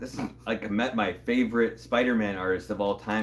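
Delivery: plain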